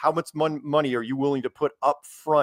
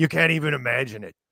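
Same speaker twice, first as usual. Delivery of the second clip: rough, gritty put-on voice. Showing how the impression should sound: gravelly David Weiss impression. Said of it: "you gotta be more gravelly".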